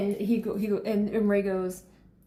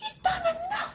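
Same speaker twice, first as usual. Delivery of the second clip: loud shouting, higher. Reacting to what is happening on screen: loud, yelling. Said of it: "how loud I am".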